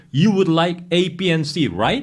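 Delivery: gentle upward pitch lift on final right. Checking an order back with the customer: slight rise at the end. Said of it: "이런 식으로 끝을 살짝 올리는 거".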